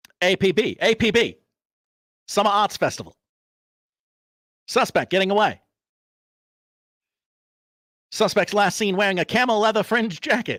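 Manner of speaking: put-on old-timey 1940s man voice. Giving a suspect description over police radio as asked: 1940s guy voice. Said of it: "in his nineteen forties guy voice".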